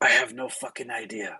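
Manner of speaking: whispering voice. Voicing Ismark answering a companion: whisper. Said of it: "Ismark is gonna whisper back".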